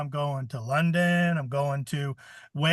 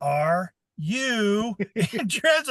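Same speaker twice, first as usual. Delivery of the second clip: very slow, drawn-out, over-deliberate delivery; 6 semitones higher than usual. Retelling a woman asking you a question you don't understand: very slow. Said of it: "you can say it as slow as you want".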